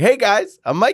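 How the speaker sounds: put-on goofy, high, nerdy, kid-style little voice. Retelling how he introduced himself to Josh and Amy: imitating own nerdy greeting. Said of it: "I literally was so nerdy".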